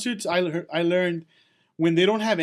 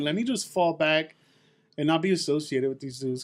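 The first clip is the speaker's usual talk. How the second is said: normal talking voice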